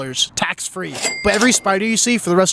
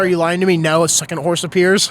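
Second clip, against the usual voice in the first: usual speaking voice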